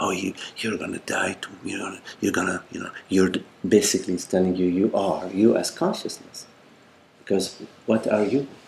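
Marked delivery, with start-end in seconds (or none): 0.0-2.9 soft, hushed, breathy whisper. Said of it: "is whispering to you".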